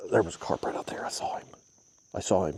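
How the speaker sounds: soft, breathy, hushed whisper, barely voiced. A fisherman speaks to his video audience; whispering. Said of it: "I don't know why I'm whispering".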